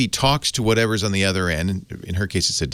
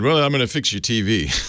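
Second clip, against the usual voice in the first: mock-condescending, imitated condescension; 4 semitones higher than usual. Retelling what the Frontier tech said on arrival, mock-condescending. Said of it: "I would say condescendingly said".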